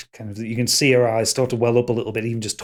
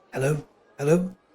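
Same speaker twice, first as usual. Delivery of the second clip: little, small-sounding, high voice; 5 semitones higher than usual. Narrating a scene, someone behind a creaking door answers a knock in a small voice. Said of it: "you hear a small voice behind".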